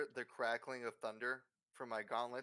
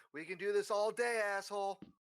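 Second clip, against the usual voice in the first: put-on, high, loud, drawn-out scream; 8 semitones higher, 6 dB louder than usual. Voicing Erastus screaming at a glass phylactery: screaming at the phylactery. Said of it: "Erastus screams at the phylactery".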